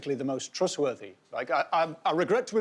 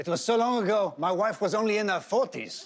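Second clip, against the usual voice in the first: speaking in a put-on French accent; 2 semitones higher than usual. Performing a speech, doing the accents: a French accent. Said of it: "I'm going to do the accents".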